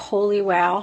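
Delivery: normal talking voice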